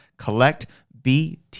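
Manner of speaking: slow, measured, deliberate, carefully enunciated delivery. Host plugging a website before moving on, slow, careful. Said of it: "I'm going to say it slow".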